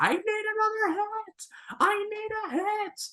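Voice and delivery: shrill, very high, full-throated top-of-lungs scream. Recounting a movie scene, the speaker acts out a character: mock-screaming as Renton. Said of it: "screaming at the top of his lungs".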